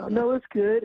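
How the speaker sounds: squeaky, very high voice, an octave up. Imitating how a friend sounds when lying: imitating a high-pitched lying voice. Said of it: "his voice goes octave high when he's lying".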